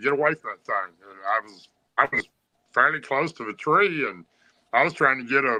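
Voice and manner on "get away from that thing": usual speaking voice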